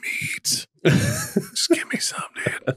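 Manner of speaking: drawn-out, very slow, hushed whisper. Voicing what the dog wants while it waits for pulled pork: imitating a whisper. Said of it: "She's whispering it".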